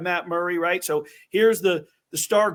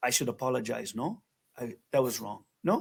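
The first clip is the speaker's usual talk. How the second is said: put-on very low, soft, deep, quiet French accent; 7 semitones lower, 9 dB quieter than usual. Retelling a man flagging him over to apologize, Marc-Andre's French accent. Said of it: "he comes with that French accent".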